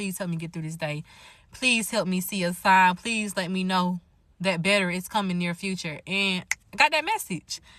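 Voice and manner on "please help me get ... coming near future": put-on tearful pleading, near tears. Retelling a prayer at work, on the verge of tears: retelling a tearful begging prayer. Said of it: "about to be on the verge of tears and just begging God".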